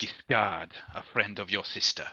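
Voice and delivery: low, dropped, conspiratorial, confiding undertone. A stranger, asked who he is, introduces himself, conspicuously lowered voice. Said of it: "he lowers his voice conspicuously and leans forward".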